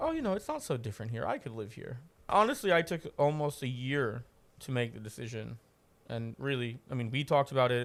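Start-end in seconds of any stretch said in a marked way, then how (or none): 0.0-2.0 put-on heavy sarcasm, overdone cheer, swooping sing-song. Retelling a comment made in the first hour of a trip: sarcastic comment. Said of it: "I made a very sarcastic comment like".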